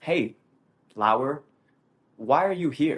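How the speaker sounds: put-on gentle, kindly, friendly, easygoing tone. Retelling how the instructor spoke to him, imitating a soft friendly tone. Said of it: "he talked to me in a very soft tone, like a very friendly".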